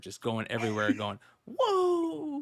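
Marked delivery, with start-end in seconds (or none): 1.5-2.4 "whoa" drawn out at very high pitch. Retelling a costumed fan walking around yelling: imitating a Ric Flair "whoa". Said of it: "dressed up as Ric Flair".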